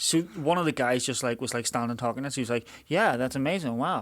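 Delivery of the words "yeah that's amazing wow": put-on, transatlantic-sounding American accent. Retelling what an American guy said to them in Castlewellan: imitating an American accent. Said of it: "that was that was my American accent".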